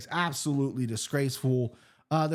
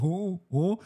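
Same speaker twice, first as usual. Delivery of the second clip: higher-pitched mock mouthful-of-food voice; 4 semitones higher than usual. Retelling a surprising remark heard while eating: imitating talking with mouth full. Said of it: "with a mouthful of food".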